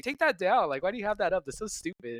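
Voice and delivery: annoyed, fed-up tone. Retelling the wife's reaction to a towel in the window: imitating annoyed wife. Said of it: "annoyed with me all week".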